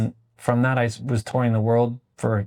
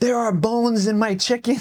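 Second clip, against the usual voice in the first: very high, scandalised, appalled, indignant outburst; 11 semitones higher than usual. Retelling how an appalled diner complained, imitating an appalled customer. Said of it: "he appalled, stands up".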